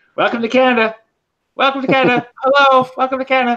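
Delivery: squeaky, very high cartoon beaver voice. Retelling how someone voiced a beaver standing in the road, voicing a beaver. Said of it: "somebody decided to voice into it".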